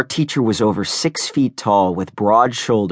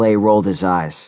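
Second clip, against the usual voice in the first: plain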